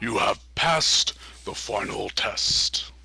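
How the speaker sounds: resonant, echoing voice resonating from within. Game narrator voicing a talking door to the players: deep resonant voice. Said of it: "You hear a deep voice uh, resonate from inside".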